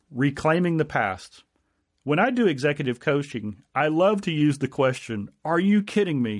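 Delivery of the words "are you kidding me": emphatic, strong, forceful voice. An executive coach demonstrates a favorite coaching question, in a strong voice. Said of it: "in a strong voice".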